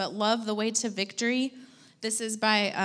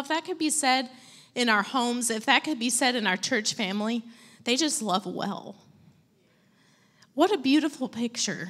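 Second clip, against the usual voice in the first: tearful voice, crying while speaking; 2 semitones higher than usual. Speaking to a church audience, crying while speaking. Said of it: "I don't even know why I'm crying".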